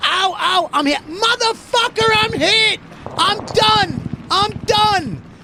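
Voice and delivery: put-on very high, slow, drawn-out pained cries. Retelling a paintball game, imitating son crying out hurt. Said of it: "and then he goes like this".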